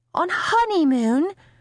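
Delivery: very high, gasped voice. A mother reacts to her daughter's news, gasped. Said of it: "Mum gasped".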